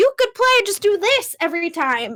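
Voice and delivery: high, loud, joking, teasing voice.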